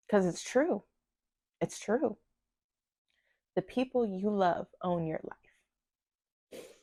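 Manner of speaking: tearful, choked-up voice on the edge of tears. Recalling what their dad told them years ago, tearing up. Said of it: "here I am tearing up".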